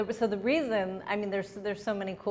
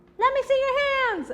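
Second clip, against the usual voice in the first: high, loud, fast hype call. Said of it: "and they're like".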